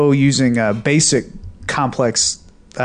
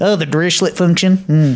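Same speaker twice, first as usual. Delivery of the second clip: put-on rural Kentucky accent; 4 semitones higher than usual. Showing someone how to pronounce a term, in a rural Kentucky accent. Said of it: "some guy from rural Kentucky".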